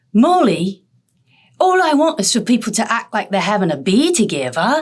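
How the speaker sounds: put-on animated British accent with a lively lilt. Quoting what a colleague said on a phone call, imitating a colleague's accent. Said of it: "nice accent".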